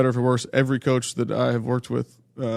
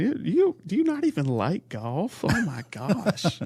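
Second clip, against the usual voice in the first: very slow, drawn-out, swooping, blunt, sing-song voice; 7 semitones higher than usual. Repeating a coach's question about golf: Hugh Freeze impression. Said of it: "That was direct, man".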